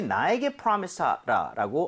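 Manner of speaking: ordinary talk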